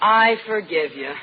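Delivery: earnest, sincere, heartfelt delivery. Repeating the forgiveness after being told to mean it: sincere, meaning it. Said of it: "That's better".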